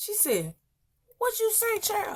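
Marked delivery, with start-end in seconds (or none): 1.2-2.2 put-on indignant tone at a very high pitch. Retelling how the mama reacted to the child's remark: imitating an indignant retort. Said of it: "my mama jacked up".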